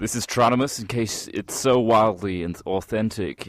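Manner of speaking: exaggerated American accent. Trying out accents with a partner, introducing tronimus in a stereotypical american accent. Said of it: "stereotyping American accent".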